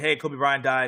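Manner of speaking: ordinary delivery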